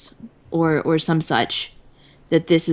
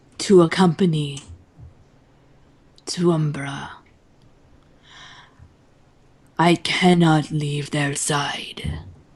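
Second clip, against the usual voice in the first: rough, gravelly monster voice. A game narrator voicing a golem addressing the players, gravelly golem voice. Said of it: "it says with a kind of a gravelly voice".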